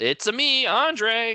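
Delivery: exaggerated, very high, loud and slow. Signing off at the end of an episode, saying own name: exaggerated Mario voice. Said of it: "I put more mustard on that than Chris Pratt did".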